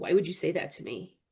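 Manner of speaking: put-on voice turning serious. Retelling a phone call, imitating the aunt turning serious. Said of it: "she got really serious".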